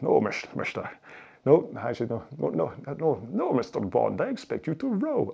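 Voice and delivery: animated character voice, swooping, wide pitch swings throughout. Joking about rowing with short shoulders, as Sean Connery. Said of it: "Sean Connery's rowing with his short shoulders".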